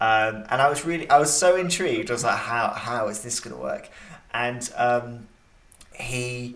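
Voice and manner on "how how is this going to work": usual speaking voice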